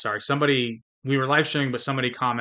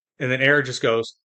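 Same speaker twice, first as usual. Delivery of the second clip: normal talking voice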